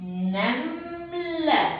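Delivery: slow stretched word. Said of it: "هتبقى".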